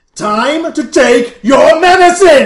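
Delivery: window-rattling bellow, very loud, high and shrill. Describing the doctor's voice you hear in the scene: very loud doctor's voice. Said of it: "Very, very loud".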